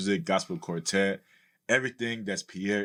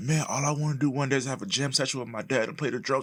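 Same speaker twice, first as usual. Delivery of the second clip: put-on high, tearful sobbing; 6 semitones higher than usual. Recalling a teenage talk with mom about the musician dad, reenacting own crying. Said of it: "And I was crying like".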